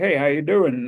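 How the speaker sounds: put-on Texan accent. Retelling meeting Bradley Cooper on set: imitating Bradley Cooper's Texan accent. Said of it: "he talks with a Texan accent".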